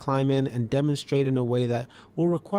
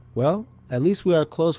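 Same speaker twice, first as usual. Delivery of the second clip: normal talking voice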